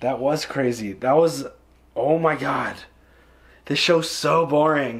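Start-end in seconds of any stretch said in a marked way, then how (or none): 3.6-5.0 sarcastic tone. Reacting to a wild episode just discussed: sarcastic. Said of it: "I'm obviously being sarcastic".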